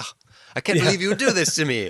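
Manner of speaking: play-acted very loud, shrill, indignant outcry. Retelling a film scene, imitating a character: imitating an offended character. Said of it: "he's the one who's offended".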